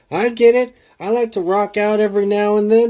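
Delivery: very high, wholesome tone. Quoting a movie cop's line in real conversation, John C. Reilly's wholesome movie-cop tone. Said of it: "he says it in a really wholesome tone".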